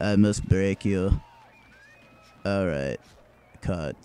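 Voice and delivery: put-on low, bored Russian-accented voice. Imitating Dolph Lundgren delivering a line without caring: Dolph Lundgren not caring. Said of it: "Dolph Lundgren just doesn't give a shit".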